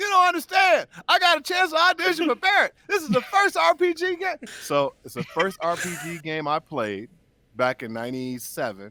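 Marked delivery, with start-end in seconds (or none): 0.0-4.4 put-on excited yell, higher and louder. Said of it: "Why are you yelling?".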